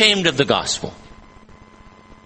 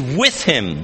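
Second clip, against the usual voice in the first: stress placed on the word "with". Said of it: "the phrase".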